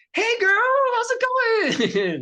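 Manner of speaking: very high-pitched, swooping voice. Voicing Corey in a scene about fetching drinks, Corey's high-pitched voice. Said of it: "Her high pitched voice".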